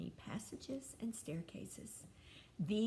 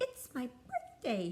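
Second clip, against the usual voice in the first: high, loud, squeaky little mouse voice; 5 semitones higher, 5 dB louder than usual. Reading a story aloud as the young mouse greets Mister Apple, Wilfred's squeak. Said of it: "he squeaked".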